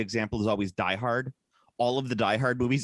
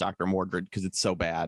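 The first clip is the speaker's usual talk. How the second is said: ordinary delivery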